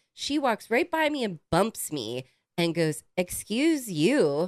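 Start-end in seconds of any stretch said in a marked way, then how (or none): 3.2-4.5 put-on condescending tone. Recounting a woman who bumped into the speaker, mock-condescending.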